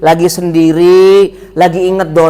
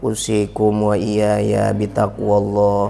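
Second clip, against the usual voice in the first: low, slow, droning, sleepy sermon voice. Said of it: "nadanya tinggi, nggak boleh turun".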